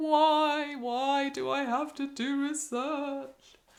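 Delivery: high, very slow, despairing, "why" stretched out. The speaker imitates students asking why they must do research: mock despairing voice. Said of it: "[despairing voice]".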